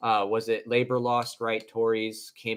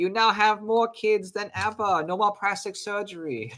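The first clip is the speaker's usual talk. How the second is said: put-on Korean accent, pitched way up high; 10 semitones higher than usual. Answering that the accent was Korean: imitating a Korean accent. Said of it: "So the Korean's like".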